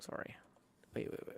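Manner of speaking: ordinary delivery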